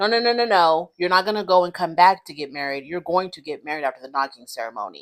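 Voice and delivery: authoritative, godlike, commanding delivery. Retelling how Mr. Ark told Niles when to get married: Mr. Ark's authoritative, godlike voice. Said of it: "in his very authoritative, godlike voice".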